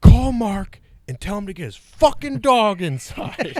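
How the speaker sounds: very high, very loud furious angry yelling. Retelling a house owner's call to his wife about a barking dog: imitating someone angry. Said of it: "giving his wife shit".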